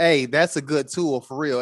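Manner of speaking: usual speaking voice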